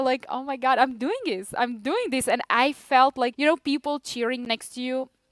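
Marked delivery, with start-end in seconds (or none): 0.3-2.3 acted, emotional, overwhelmed with pride, marveling. Recalling finishing after her companion quit, retelling own proud moment. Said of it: "I was so proud".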